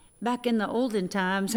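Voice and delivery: ordinary talk, nothing marked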